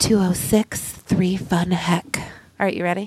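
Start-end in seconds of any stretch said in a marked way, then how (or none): 0.0-2.2 sultry, sexy put-on voice. Speaker announces the line, then says it in a sexy voice. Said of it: "here it goes in your sexiest voice".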